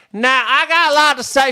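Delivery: very high, loud put-on Louisiana lady accent. Retelling what a lady at a book club said: imitating a loud louisiana lady. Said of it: "she would talk like this".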